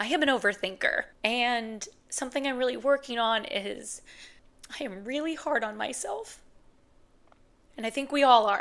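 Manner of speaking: tearful, choked-up voice. Speaker who just had therapy, talking openly, tearing up. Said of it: "because I'm tearing up".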